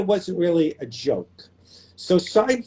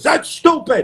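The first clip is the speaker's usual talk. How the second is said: put-on neurotic New York voice, higher and louder; 9 semitones higher, 4 dB louder than usual. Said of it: "It's my Larry David impression".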